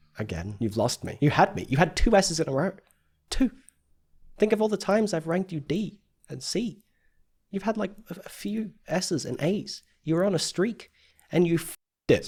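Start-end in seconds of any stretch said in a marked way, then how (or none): 10.1-12.3 mild heated frustration, slightly angry scolding tone. Ranking someone's work, the speaker tells him he lost his streak, a bit angry. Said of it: "that was a bit angry".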